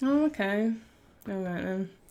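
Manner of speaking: mildly disappointed, a bit let down. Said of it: "You sound a bit disappointed now".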